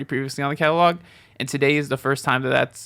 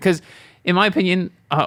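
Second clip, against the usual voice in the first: voice breaking upward mid-word; 5 semitones higher, 4 dB louder than usual. Host sharing his opinion on his own podcast, voice cracking. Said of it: "that voice crack was not meant to happen".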